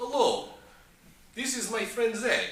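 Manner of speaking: very high, put-on fake Russian accent. Retelling how a man introduced the speaker to his friend: fake Russian accent. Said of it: "trying a Russian accent".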